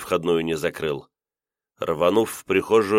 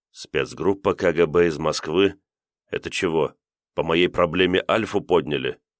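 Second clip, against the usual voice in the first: plain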